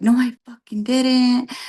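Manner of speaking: put-on angry outburst. Retelling an argument, quoting a woman who just went off: retelling an angry outburst. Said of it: "And she just went off".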